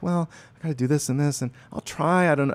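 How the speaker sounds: mock vague, hesitant, noncommittal, wishy-washy tone. Acting out someone asked for help who answers: imitating a wishy-washy reply. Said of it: "someone's kinda wishy-washy".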